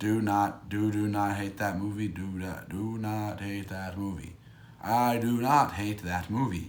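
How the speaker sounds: soft, flat, mechanical robot monotone. Talking about a movie, the speaker slips into talking like a robot. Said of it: "Why am I talking like a robot?".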